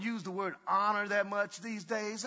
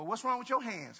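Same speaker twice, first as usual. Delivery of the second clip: snide, snarky, sarcastic tone. Showing a teen's reply to a request for water: sarcastic teen reply. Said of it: "Being sarcastic".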